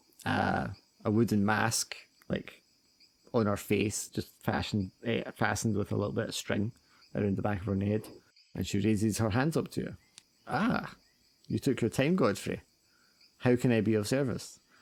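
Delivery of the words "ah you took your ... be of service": put-on wizened, haggard old crone voice. Voicing an old woman greeting a player who took his time: voicing a wizened haggard old woman. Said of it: "This wizened, haggard old woman".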